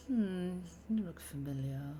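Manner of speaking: very quiet, hushed mutter under the breath. Voicing a character who pauses and looks at you, muttered under breath. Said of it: "he kind of says that like under his breath".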